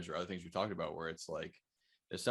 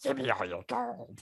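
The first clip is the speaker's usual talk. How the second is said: put-on goblin voice, much higher pitched; 6 semitones higher, 5 dB louder than usual. Speaker jokes on the podcast about being a goblin: goblin voice. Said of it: "That's my actual voice".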